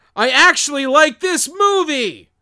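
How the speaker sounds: very loud, very shrill, high excited exclamation. Podcast host reading a four-star review aloud, yelled. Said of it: "The only reason why I said it like that is because it's got 3 exclamation points. So he was clearly yelling".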